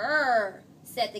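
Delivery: ordinary delivery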